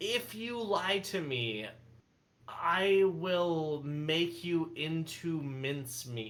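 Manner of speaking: thoroughly fed-up, exasperated, irritated tone. A player's character switches back to Common to warn a man against lying: most irritated tone possible. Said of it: "I say it in the most irritated fashion possible".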